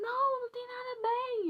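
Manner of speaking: put-on very high sobbing, tearful distress. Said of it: "Eu chorando, chorando a beça".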